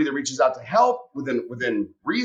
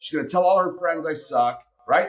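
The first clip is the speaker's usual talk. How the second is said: ordinary talk, nothing marked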